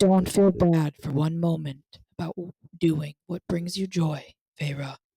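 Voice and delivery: very deep, serious, level monotone. Quoting how he said a line, in a very deep serious monotone. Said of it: "he had this very deep monotone. So like, serious".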